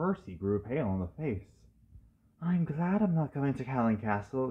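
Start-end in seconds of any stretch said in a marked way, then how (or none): 2.4-4.5 whispered, higher. Narrator reading Percy speaking to the twins, whispered. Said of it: "he whispered before puffing away".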